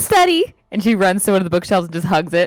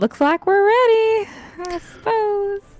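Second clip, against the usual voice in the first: bright, chipper, very high, rising upbeat voice; 11 semitones higher than usual. Looking mournfully at books she must leave behind, she speaks up in a chipper voice. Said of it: "in a more chipper voice".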